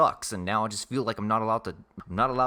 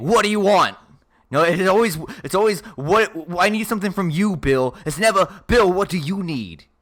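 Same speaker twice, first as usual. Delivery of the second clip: put-on nasal Boston accent, higher and louder; 8 semitones higher, 10 dB louder than usual. Playing Bill Burr in a scene with the other speakers: Bill Burr impression. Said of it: "I'm just gonna do this fucking voice then".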